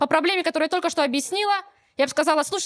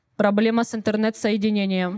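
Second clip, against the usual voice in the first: robotic talking voice, much lower; 7 semitones lower than usual. Retelling answering an automated support line, talking like a robot. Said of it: "надо самому разговаривать как робот".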